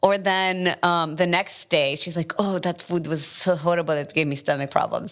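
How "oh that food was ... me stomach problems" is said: put-on Palestinian-accented speech. Imitating mom judging her restaurant food: strong Palestinian accent. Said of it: "an awesome, strong Palestinian accent".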